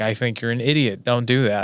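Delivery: ordinary talk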